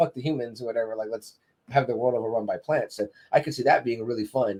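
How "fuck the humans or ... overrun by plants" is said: ordinary talk, nothing marked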